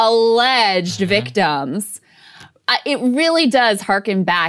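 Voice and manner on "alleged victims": scornful voice full of contempt. Acting out the way she says a phrase you love, imitating a voice full of contempt. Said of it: "in this just voice full of contempt".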